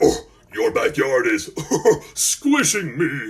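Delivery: very deep, low storybook dragon voice. Reading a story aloud, the dragon speaks to Malcolm in a deep dragon voice. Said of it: "spoke in its deep, deep dragon voice".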